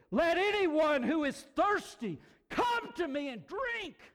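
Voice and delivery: forceful, very loud, high-pitched shout. Retelling a bible scene, acting out a cry to the thirsty, retelling a loud shout. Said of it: "In a very loud voice, he yelled".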